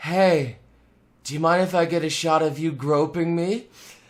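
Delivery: low whisper. Speaker retells what a woman whispered in his ear, retelling a whisper. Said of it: "she whispers into my ear".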